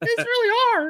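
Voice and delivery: very high voice cracking upward. Retelling a moment from a challenge: imitating Jeff's cracking voice. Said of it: "Jeff's voice was cracking".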